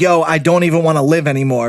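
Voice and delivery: ordinary talk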